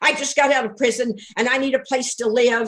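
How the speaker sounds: irritated, disgruntled, agitated, worked-up voice. Retelling a caller asking about properties: mock-disgruntled, agitated tone. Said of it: "he was very disgruntled and very ag- and his, this was his tone of voice".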